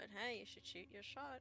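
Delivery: muttering, mumbling. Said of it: "kinda mutters to him".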